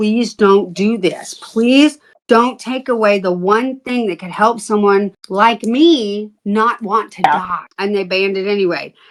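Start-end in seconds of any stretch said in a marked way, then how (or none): 0.0-7.7 mock, pleading, begging tone. Retelling standing before a school board: retelling own begging. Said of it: "I stood there begging them".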